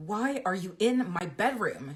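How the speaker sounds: drawn-out, slow hissing words. Michelle confronts the narrator, who has come into her bedroom, hissing. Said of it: "She hisses".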